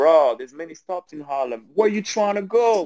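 put-on heavy American accent. Retelling a man on the Harlem train answering his question, thick American accent. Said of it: "With this thick American accent".

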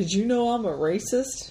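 normal talking voice

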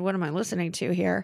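plain

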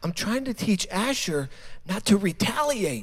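understated, quiet, soft-spoken voice. Retelling what Heather said as the children screamed: retelling a quiet remark. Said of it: "She quietly says".

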